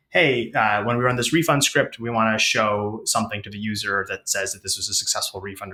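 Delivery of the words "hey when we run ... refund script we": ordinary delivery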